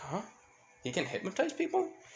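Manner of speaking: puzzled, bewildered, high pitch swooping. Retelling a fan story as a confused character asking a question: confused. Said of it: "Ochako confused".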